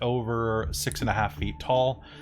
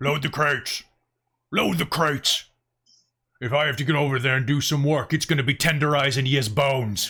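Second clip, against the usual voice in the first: brutish goblin voice, shouting; 3 semitones higher, 4 dB louder than usual. Game master voicing a goblin the players hear from above, goblin shouting orders in Goblin. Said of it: "you can hear him shout in Goblin".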